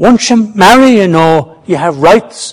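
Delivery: plain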